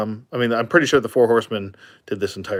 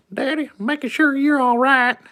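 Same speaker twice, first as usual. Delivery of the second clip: squeaky, very high put-on South Carolina accent. Voicing his puppy checking up on him, in a put-on southern accent. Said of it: "I give him a southern accent".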